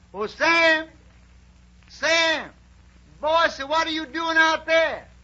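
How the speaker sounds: high, loud holler. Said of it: "he hears a voice hollers".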